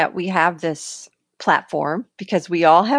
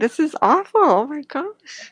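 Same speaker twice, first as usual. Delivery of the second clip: teary, choked-up, higher voice; 8 semitones higher than usual. Talking about ms with others who understand, teary. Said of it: "I'm getting like teary".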